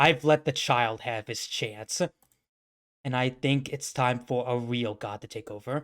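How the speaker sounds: genuinely angry, commanding declaration. Retelling what a character said to her, imitating an angry character. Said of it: "getting legitimately angry".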